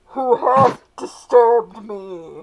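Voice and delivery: very loud, thundering, booming ghost voice. Narrating a scene, the speaker voices a disturbed ghost in a booming ghostly voice. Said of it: "you hear the ghostly voice boom out".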